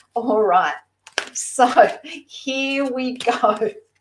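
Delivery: giggly, light laughing while talking. Speaker about to answer a question about Mister Right, giggling. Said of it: "I'm sorry I'm giggling".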